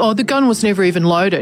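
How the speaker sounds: ordinary talk, nothing marked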